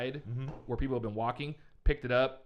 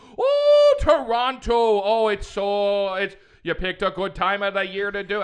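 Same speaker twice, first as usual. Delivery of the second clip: booming, loud, slow, drawn-out put-on Irish accent; 8 semitones higher, 13 dB louder than usual. Retelling a man's reply after hearing they're going to Toronto, imitating an Irish accent. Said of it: "I don't know why he turned into Irish".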